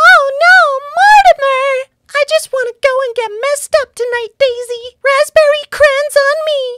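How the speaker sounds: very high cartoon mouse character voice. Running through cartoon character impressions one by one: Minnie Mouse voice. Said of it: "Minnie Mouse".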